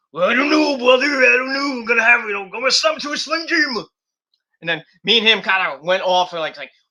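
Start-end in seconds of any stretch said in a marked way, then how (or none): 0.2-3.8 put-on gruff wrestler voice, higher and louder. Retelling Jay's reply, done as a Macho Man impersonation. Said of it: "we're trying to do the, our best".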